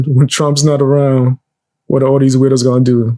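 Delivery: ordinary delivery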